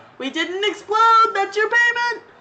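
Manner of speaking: cheeky, high, loud taunting shout.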